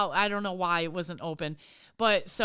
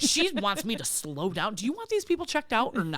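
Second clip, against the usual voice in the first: higher-pitched, put-on sassy tone; 3 semitones higher than usual. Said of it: "I was, like, super sassy to the lady".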